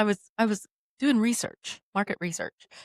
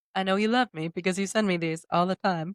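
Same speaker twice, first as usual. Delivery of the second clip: ordinary talk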